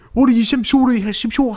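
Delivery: fake old British codger voice. Imitating an old British guy from a movie: put-on old British guy voice.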